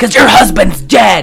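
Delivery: loud shouting. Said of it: "she's yelling at her".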